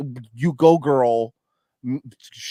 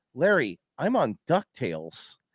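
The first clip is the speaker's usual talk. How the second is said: dry, hushed, deadpan delivery; 5 dB quieter than usual. Retelling how someone answered a question, retelling a deadpan reply. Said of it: "he goes to Larry deadpan".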